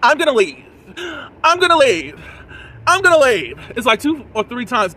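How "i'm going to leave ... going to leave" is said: high, loud dramatic huff, repeated over and over. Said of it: "She's like".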